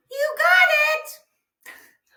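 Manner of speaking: very high, very loud, squeaky helium voice. Quiz host confirming a correct answer, in a helium voice. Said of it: "That was my helium voice".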